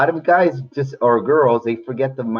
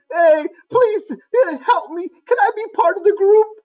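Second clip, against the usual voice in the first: small, tiny, very high put-on little voice. While explaining like terms to kids, the speaker gives one term a little character voice. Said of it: "I'm doing these little voices".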